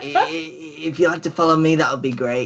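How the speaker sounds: put-on little imp voice, grinning.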